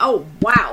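wow said with plain sarcasm. Retelling a reaction to a trial story, reenacting a sarcastic wow. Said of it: "Like sarcasm".

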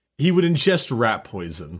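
ordinary talk

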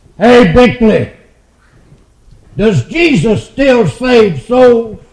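loud booming burst. Retelling a man calling out to the speaker in a Walmart checkout line: booming shout. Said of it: "this booming voice busted out".

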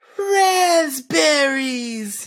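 very high-pitched voice. Saying the word in another person's voice: imitating Carol Chan's voice. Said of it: "I feel like I'm almost at her voice".

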